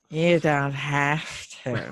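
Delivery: snide, cutting, catty, bitchy put-on voice. Retelling a TV character's cutting reply to another speaker in a catty put-on voice. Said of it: "your cunty voice".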